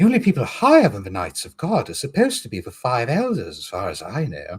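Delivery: put-on light, swooping, animated voice with English accent. Voicing characters aloud, the speaker switches to a light English Brook voice. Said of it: "Brook's a very light English voice".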